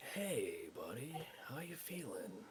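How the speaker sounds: hushed half-whispered voice. A character checks on a buddy who just woke up; half-whispering. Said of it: "Just doing it in a whisper".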